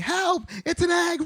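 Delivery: very high, shouted, panicked screaming.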